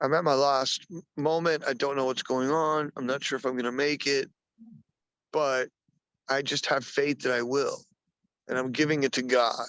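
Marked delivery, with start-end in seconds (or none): none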